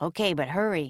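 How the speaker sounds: ordinary delivery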